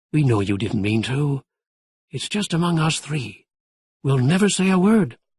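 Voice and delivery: gentle, soft wolf voice. Narrator reads the wolf reassuring the frozen Webster: soft wolf voice. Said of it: "said the wolf's soft voice".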